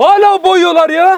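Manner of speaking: high, loud, furious scolding yell.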